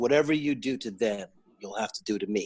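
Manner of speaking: ordinary delivery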